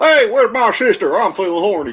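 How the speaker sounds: squeaky, very high put-on Southern accent. Bantering about accents, the speaker offers a Southern accent impression. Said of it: "I could do a southern impression".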